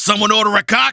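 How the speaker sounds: mock brash shout, loud and high. Quoting a cut-off voice line from the hero: imitating the hero yelling. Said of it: "so he yells".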